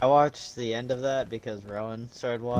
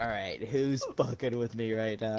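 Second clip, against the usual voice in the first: normal talking voice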